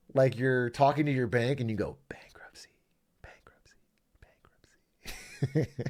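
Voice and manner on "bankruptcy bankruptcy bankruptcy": teasing, hushed, breathy whisper, barely voiced. Imagining someone talking to their bank, whispering. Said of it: "you whisper it?".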